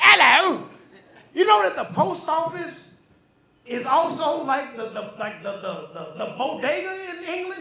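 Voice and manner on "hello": put-on booming, belted-out British accent. Showing how everybody in England sounds greeting: imitating a British hello. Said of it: "Everybody sounds like that over there".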